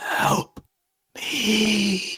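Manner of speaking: ghostly, ghastly whisper with me drawn out. Narrating to the others, voicing the voice from the base of the skull, ghastly pleading. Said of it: "you hear this this this ghastly voice almost plead".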